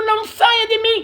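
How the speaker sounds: imitated crying, pleading voice. Retelling what is said while kneeling in prayer: retelling own tearful plea. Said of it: "Eu choro de joelho e digo".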